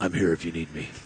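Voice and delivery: deep, hushed, low, quiet superhero voice. Redoing a quoted line from someone answering the bat signal, Bruce Wayne voice. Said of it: "Everybody's got to have a Bruce Wayne voice".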